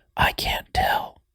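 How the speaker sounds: faint, hushed, barely-there whisper. Retelling a recording where a voice answers a question: imitating a whispering voice. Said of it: "a whispering voice go".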